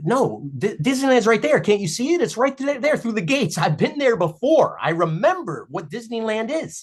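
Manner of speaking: mock very high, pleading, upset, insistent voice. Speaker acting out an imagined scene, acting upset and insistent. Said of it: "And you start getting upset".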